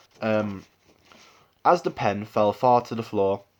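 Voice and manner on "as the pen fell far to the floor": received pronunciation accent. Reading the first lines of a passage for accent work: rp accent. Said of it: "we started off just by doing the the R P sort of sort of accents. I'm gonna I'll do the first um two lines of that now".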